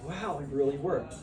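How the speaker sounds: usual speaking voice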